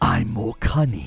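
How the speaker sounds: sly, cunning fox character voice, raspy. Explaining how they blend character voices, demonstrating a cunning fox voice. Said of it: "the fox who's like".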